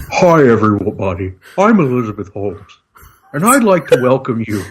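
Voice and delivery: put-on phone sex host voice. Joking after a remark about an Elizabeth Holmes phone sex hour: Elizabeth Holmes voice. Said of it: "This sounds like the opening to the Elizabeth Holmes".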